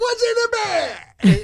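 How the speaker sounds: poor, very high, very slow, loud, drawn-out cry. Showing a co-host an impression of the best line from Seven: Brad Pitt in Seven impression. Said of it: "It's spot on".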